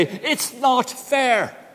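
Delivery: fed-up, forceful, aggressive, exasperated. Showing how the tone of voice changes, in loud, aggressive exasperation. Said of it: "in a sense of exasperation, louder, more aggressively".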